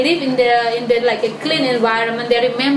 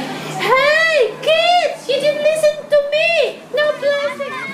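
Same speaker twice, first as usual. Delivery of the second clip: very high, very slow, drawn-out scream. Retelling how a boy screamed at kids who didn't listen, acting out the scream. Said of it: "Gilang just screaming".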